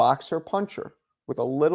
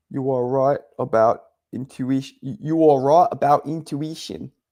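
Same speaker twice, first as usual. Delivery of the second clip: attempted put-on South African accent. Discussing boxing news, the speaker tries out a South African accent. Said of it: "I'm trying to do a South African accent".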